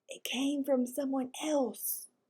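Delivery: hushed whisper. Reading a story aloud, a character warning of an outside howl: whispering. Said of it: "I lowered my voice to a whisper".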